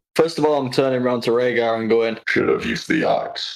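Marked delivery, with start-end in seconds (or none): 2.2-3.5 slow, eerie, creepy robot-like voice. On their turn in the game, a player speaks in character to Rhaegar, creepy voice. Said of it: "Creepy voice is right".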